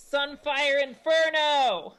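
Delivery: shrieked, very high, very loud yell. Casting a spell in character: yelling a spell name. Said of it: "she does that and yells".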